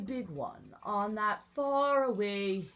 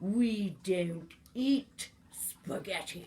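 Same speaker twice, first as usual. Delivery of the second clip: growled line in a beastly lion voice. Narrator reads the lion's reply in a story: lion growling. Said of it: "The lion growled".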